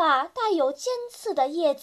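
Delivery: ordinary delivery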